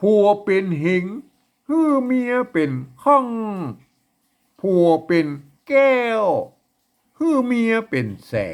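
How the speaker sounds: northern Thai accent. Demonstrating a sample sentence in dialect, Tai Yuan Chiang Mai accent. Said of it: "อันนี้คือสำเนียงไต้ยวนเชียงใหม่นะครับ".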